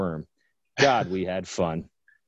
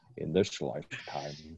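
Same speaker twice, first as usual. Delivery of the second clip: put-on Scottish actor voice, lower and quieter; 5 semitones lower, 11 dB quieter than usual. Joking about running from a Tyrannosaurus Rex: Sean Connery voice. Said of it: "I told myself I wasn't gonna do that voice".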